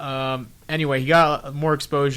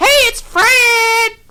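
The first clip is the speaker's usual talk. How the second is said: very high, loud, swingy yell, last word stretched; 12 dB louder than usual. Describing a hyperactive kid character, in a high-pitched swingy Fred voice. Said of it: "an idiot with a high-pitched, swingy voice".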